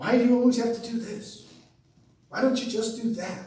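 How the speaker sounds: reproachful nagging tone. Illustrating self-talk that fails to let others be: scolding tone. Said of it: "Scolding tone of voice".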